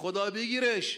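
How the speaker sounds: put-on shouted cry in a Turkish accent. Retelling how a humble porter cried out as a child fell from a roof, retelling a Turkish-accented shout. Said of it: "به همون لهجه ترکی داد زد".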